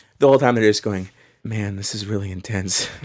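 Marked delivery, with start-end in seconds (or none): 1.4-2.9 put-on laid-back, spaced-out, mellow stoned drawl. Retelling how fans who have had marijuana react to the game: imitating stoned, mellow fans. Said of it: "less inclined to just be".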